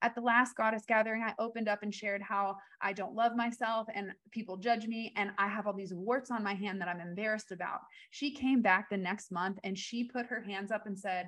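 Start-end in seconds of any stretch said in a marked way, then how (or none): none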